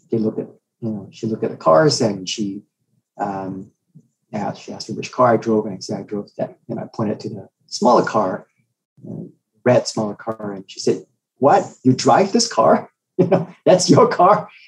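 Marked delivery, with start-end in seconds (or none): 11.3-14.4 mocking, incredulous tone, pitched up. Retelling her reaction to the smaller red car: imitating a mocking tone. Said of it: "that sort of mocking tone".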